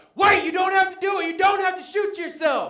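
shrill, booming, very high, loud shouting preacher voice. Retelling a preacher calling out to a man with a gun: imitating a preacher shouting. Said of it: "this preacher shouts out".

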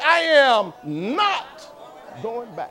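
very slow, firm, resolute voice with conviction. Showing the congregation how to say the line: said with conviction. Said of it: "You have to say".

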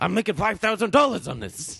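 put-on New York accent, character voice. Retrying the Al Pacino impression of the same line. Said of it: "that was good".

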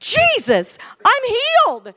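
very high, very loud, swooping shrieking scream. Acting out a healed man who sees Jesus: screaming. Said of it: "he started screaming".

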